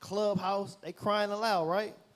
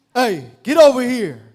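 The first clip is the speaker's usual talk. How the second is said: very loud, high, booming, commanding manly voice; 5 semitones higher, 20 dB louder than usual. Acting out how they spoke to someone, in a loud manly voice. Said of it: "They was speaking loud like that".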